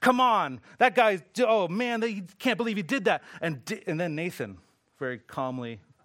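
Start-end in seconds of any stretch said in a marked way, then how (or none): 0.0-3.2 indignant, irate rant, loud, high, full of rage. Retelling how David reacts to Nathan's story: imitating irate David. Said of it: "David's just irate".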